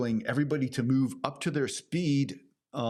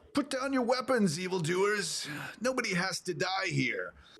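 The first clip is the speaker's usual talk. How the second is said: pitched-up, raised calling out; 7 semitones higher than usual. Game master voicing one of four attackers calling out to the players. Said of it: "one of them calls out".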